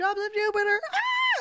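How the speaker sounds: very high, stretched-out, drawn-out screaming squeal. Retelling how middle-aged women came up to the table: imitating fans screaming.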